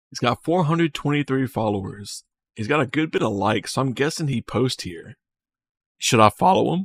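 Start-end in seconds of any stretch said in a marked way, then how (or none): 6.0-6.9 voice cracking, breaking mid-word. Looking at someone's private profile, ask the chat, voice cracking. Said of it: "Oh, my voice cracked".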